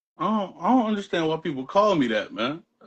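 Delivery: high-pitched, weepy, tearful crying voice. Redoing a line after being asked to sound like crying, crying voice. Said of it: "little more like like you're crying".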